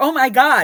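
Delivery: worked-up frantic exclamation. Retelling how a guy reacted while going nuts: imitating someone going crazy. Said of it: "He's just going crazy".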